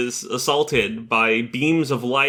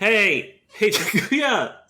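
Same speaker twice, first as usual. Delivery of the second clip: high screaming voice; 9 semitones higher than usual. Retelling a friend screaming after a rider on his motorcycle, retelling someone screaming. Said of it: "His homie is just screaming at him like".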